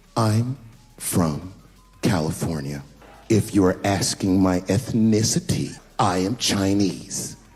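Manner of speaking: put-on very slow, condescending, talking-down delivery. Retelling how a woman answered his question about where she was from, mock-condescending. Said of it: "very condescendingly".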